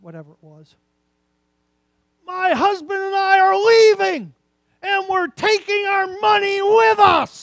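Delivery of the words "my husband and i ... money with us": very high, very loud, shrill, slow scream. Retelling how a woman at church screamed at the pastor: imitating a woman screaming. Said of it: "she's screaming at the pastor".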